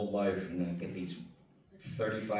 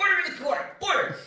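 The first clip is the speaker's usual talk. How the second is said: very high, very loud, shrill, booming judge voice; 9 dB louder than usual. Voicing the bully character as a judge in court: Roger Klotz voice. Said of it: "Judge Roger Klotz".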